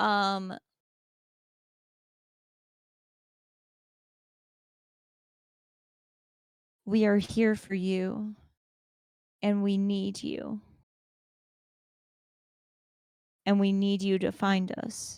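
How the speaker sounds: light, gentle, motherly voice. A different voice speaks inside the listener's head, in a light motherly voice. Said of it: "one that is more light and kind of mother-esque".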